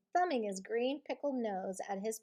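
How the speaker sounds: plain reading voice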